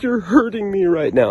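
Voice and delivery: shrill, very loud, blubbering, sobbing babble. Recounting being in the back seat kicking the front seat, retelling crying babble. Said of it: "I'm crying. I'm in like full-blown bitch babble mode".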